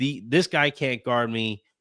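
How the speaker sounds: ordinary talk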